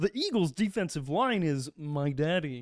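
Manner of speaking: slow, throaty, pulled from the back of the throat. Saying a line the other speaker asked for, in a Kermit the Frog voice. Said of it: "now say".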